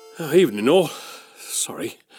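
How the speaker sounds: out of breath, winded, catching breath. A police constable greets listeners just after breaking up a fight: out of breath. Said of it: "Need to catch my breath".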